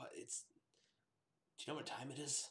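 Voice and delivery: just-woken sleepy voice. Narrator voicing a man woken by knocking at his door; groggy morning voice. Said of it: "He kind of has like that groggy morning voice".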